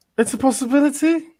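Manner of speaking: high, doubtful, unconvinced tone. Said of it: "You don't sound so convinced there".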